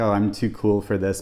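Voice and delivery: ordinary talk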